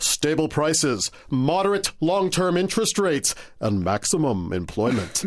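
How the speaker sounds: grand, dramatic, heroic superhero voice. Showing the other speaker how a superhero would say it, in a superhero voice. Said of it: "You got to do it like a superhero would do it".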